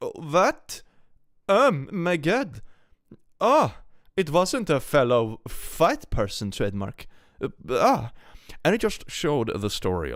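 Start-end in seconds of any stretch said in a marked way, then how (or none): 0.0-8.1 flustered, high, slow, halting stammer. Imitating a Karen caught out after a remark: imitating a flustered Karen. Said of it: "same kind of reaction as those Karens".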